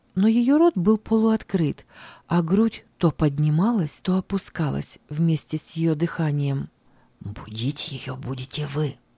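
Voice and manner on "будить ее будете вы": quiet, soft, hushed half-whisper. Standing over a sleeping lost girl, a man speaks to his companion, half-whispering. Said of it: "прошептал Хис".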